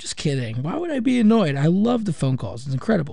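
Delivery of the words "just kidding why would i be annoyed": ordinary delivery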